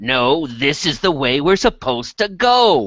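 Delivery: menacing, deliberate, slow, threatening tone, rising. Arguing in character over which way to go: threatening tone. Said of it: "as threatening a tone as I can make".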